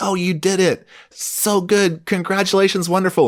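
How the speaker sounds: put-on gushing tone, very high, level pitch. Retelling how the other speaker praised learners: imitating gushing flattery. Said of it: "You buttered them up like".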